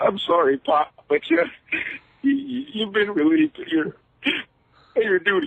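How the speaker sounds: tearful, weepy, high crying voice. Calling in, imitating Shane McMahon losing his company: imitating Shane McMahon crying. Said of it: "He's crying about his company being taken".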